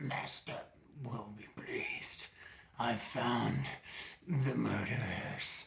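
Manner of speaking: whispered, gurgling, echoing oozy voice. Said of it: "you can hear kind of like a gurgling".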